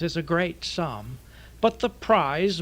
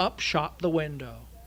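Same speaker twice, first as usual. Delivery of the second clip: usual speaking voice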